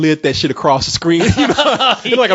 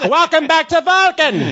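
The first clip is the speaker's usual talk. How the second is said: very high, swooping cartoon voice; 10 semitones higher than usual. Quoting an alien from the show with Kirk and Spock: Skeletor voice. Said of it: "It was Skeletor's voice".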